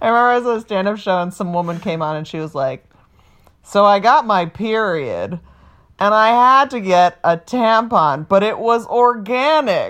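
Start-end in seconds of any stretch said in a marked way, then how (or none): 3.6-9.9 very slow, drawn-out, weird affected voice. Recalling a woman's stand-up set, imitating her weird affected voice. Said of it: "are you just saying it in a weird voice like that".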